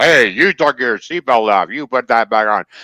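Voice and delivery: nagging female talking-car voice. Retelling taking off the seatbelt, imitating the car's female voice. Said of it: "it's a female voice of all things".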